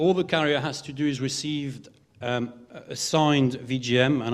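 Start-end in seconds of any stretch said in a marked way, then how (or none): 2.9-4.2 "signed" strongly stressed, slow deliberate delivery. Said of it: "I emphasize the word signed here".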